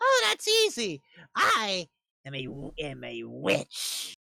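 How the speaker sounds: put-on high-pitched old crone voice. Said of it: "This old crone of a lady".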